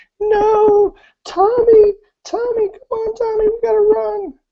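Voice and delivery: sobbing and screaming. Narrator voicing a woman trying to drag a dead boy away, crying and screaming. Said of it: "she's crying and screaming, and she's saying".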